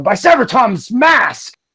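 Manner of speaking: spat-out character voice. Voicing a surprised drow drawing swords: spitting a curse. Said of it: "spits a, a curse".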